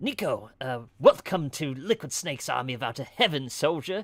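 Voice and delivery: loud, high-pitched belted character impersonation. Giving a new follower a shout-out, as you do for everybody, in a Liquid Snake impersonation. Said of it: "I do a Liquid Snake impersonation".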